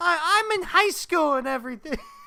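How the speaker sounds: put-on very high, loud two-year-old toddler voice. Retelling a line from the gamer girl in an anime: imitating a toddler-like voice. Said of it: "she sounds like a fucking two-year-old".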